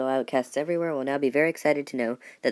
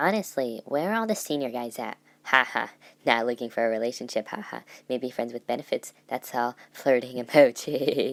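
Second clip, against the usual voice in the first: cheesy, cringy flirting voice, put-on and laid on. Reading a listener's confession aloud on the show; cringy put-on voice. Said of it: "that voice was cringy as fuck".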